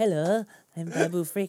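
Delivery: loud, high put-on character voice. Doing an impression the other speaker asked for: Babu Frick voice. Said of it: "do your wine hands again".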